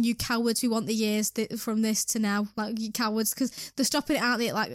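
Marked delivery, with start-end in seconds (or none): none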